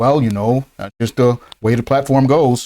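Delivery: relaxed, easygoing voice. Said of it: "It was, like, all calm".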